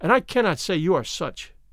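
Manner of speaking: plain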